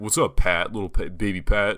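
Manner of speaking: put-on belittling, condescending, domineering, talking-down tone. Retelling how others greet with a nickname: imitating a domineering greeting. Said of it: "they're trying to dominate you".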